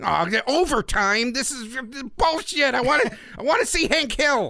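very high-pitched, outraged, fanboy-style ranting voice. Retelling being angry when a football game bumped the cartoons: imitating own past nerd rage. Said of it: "that's how I talked back then".

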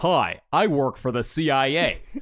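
mock American accent. Mocking how british actors sound in american roles: british person doing an american accent. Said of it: "an American accent, it's like".

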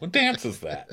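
ordinary delivery

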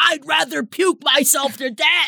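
mock yell, shouted out.

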